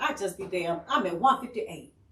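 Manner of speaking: plain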